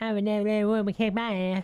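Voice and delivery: high, loud character voice. Asked what Cartman would say, doing Cartman. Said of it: "what would Cartman say?".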